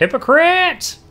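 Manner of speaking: very high, loud, cracked talking-bird voice. Narrating a game scene, a huge raven calls out as the players leave: cracked raven voice. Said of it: "you hear a cracked voice".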